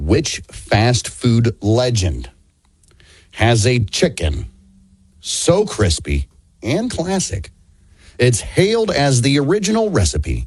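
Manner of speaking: slow, deliberate word-by-word reading. Rereading a quiz question for a player who misheard it, reading slower. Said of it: "let me read it slower".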